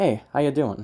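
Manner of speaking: relaxed, laid-back, casual and easygoing. Demonstrating different vocal patterns on the same script, casual delivery. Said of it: "The first one's more casual".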